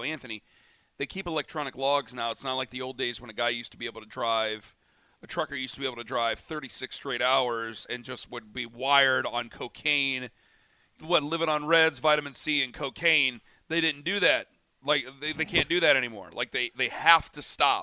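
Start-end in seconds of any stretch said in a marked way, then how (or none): none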